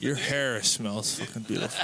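mock drunken speech. Repeating a line from the drunkest night, imitating drunk speech. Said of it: "You sound so drunk".

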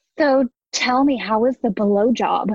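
acted-out young woman voice. Retelling how dad read a scene fully in character: imitating dad playing a young woman. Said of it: "Dad takes it and fully gets into character".

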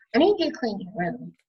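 plain

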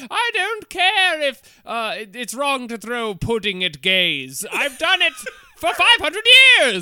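put-on drawn-out, high, aristocratic posh British accent. Imitating british conservatives in a joke: mock aristocratic british voice. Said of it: "strong aristocratic aesthetic to them where they're just like".

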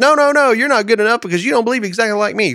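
mock loud, high-pitched screaming rant. Imitating someone who condemns other believers, mock screaming. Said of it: "Why are you over there screaming like".

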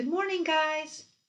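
high, very cheerful voice.

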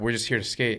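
ordinary delivery

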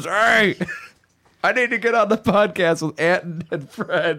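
put-on very high drunken rambling voice. Retelling a phone call from Dad: imitating drunk dad. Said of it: "He was extremely drunk".

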